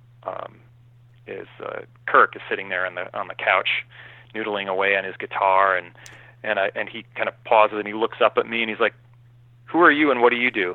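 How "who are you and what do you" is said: put-on curt, abrupt tone, higher and louder. Retelling how a guitarist greeted a newcomer: imitating a curt, abrupt question. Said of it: "very curt and abrupt".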